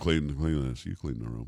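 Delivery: put-on muttering. Retelling talking back to parents' orders: imitating muttering under breath. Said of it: "say stuff under my breath".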